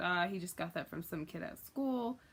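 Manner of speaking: plain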